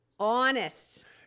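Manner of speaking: honest said in a Boston accent. Showing how the word honest would sound in a boston accent. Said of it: "if I said it with a Boston accent, it would be honest".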